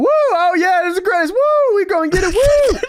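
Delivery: mock whooping cheers, very high pitch. Retelling how a man started going off and dancing: mock-excited whooping. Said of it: "he just starts going off and dancing".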